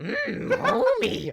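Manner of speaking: very high, loud, squeezed-out hoarse scratchy voice. Answering a remark about sounding like Marge Simpson: Marge Simpson voice. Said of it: "sounds like Marge Simpson with strep throat".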